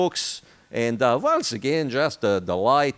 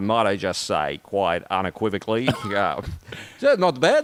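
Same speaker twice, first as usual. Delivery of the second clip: put-on Australian-accented speech; 5 semitones lower than usual. After mentioning watching Australian news, the speaker tries an Australian accent. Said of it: "a really good accent. You almost sound Australian".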